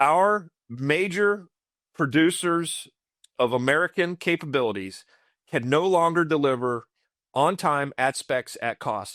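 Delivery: slow, halting, deliberate, broken-up phrasing. Speaker repeats the previous point to listeners, saying it slower. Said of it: "Let me let me let me say that slower".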